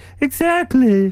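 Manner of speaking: high-pitched drawn-out whiny voice. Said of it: "He's too whiny".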